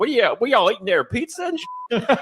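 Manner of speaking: very high, put-on hillbilly voice. Acting out a man from commercials bothering his neighbor's family, in a hillbilly character voice. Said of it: "He was like Hillbilly Pee Wee".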